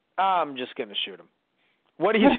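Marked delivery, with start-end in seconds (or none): none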